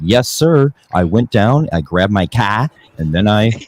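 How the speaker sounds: thick, put-on Boston accent, very slow, loud, drawn out. Imitating a friend who puts on a fake Boston accent: imitating Jay's fake Boston accent. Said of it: "Jay's fake Box-, Boston accent that he throws on".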